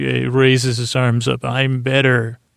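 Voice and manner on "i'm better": usual speaking voice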